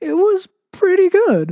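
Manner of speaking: silly, goofy, squeaky, very high, swooping voice. Reading aloud a narrator's joking admission: goofy high-pitched voice. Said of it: "said in a goofy voice".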